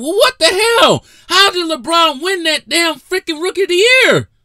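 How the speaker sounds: shrill, fed-up, exasperated yelling, very high and loud. Comparing two rookies' team records, yelling in exasperation. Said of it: "I'm sorry for yelling".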